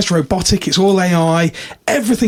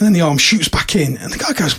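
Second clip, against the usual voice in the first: usual speaking voice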